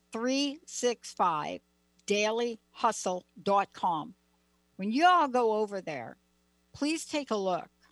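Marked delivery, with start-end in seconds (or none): 0.1-4.1 said at a slower, slowed-down pace. Repeating a website address for everybody, saying it slower. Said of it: "I want to say it slower".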